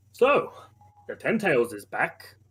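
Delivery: very slow, grave, deeply concerned tone. Voicing a character at his desk who tells the group: very concerned. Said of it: "with a very concerned look as he goes".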